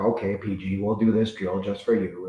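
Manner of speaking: patronising, grudging, condescending talking-down voice. Retelling how he would agree to run a drill for the speaker, mock-condescending voice. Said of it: "in that voice, that condescending".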